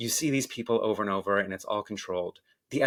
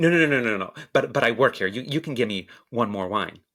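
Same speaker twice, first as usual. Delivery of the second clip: mocking, put-on condescending voice. Retelling a guest's insistence at a closed bar: imitating a condescending tone. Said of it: "in a condescending way".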